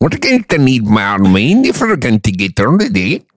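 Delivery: Scottish-accented delivery. Asked by another speaker to show a Scottish accent, doing a Scottish accent. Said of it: "Let me hear your Scottish accent".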